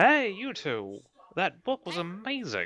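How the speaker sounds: put-on high, swooping, sing-song gnome voice. A gnome bursts out from the side of a shop, greeting two visitors; gnome voice. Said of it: "a gnome kind of comes out from the side and is like".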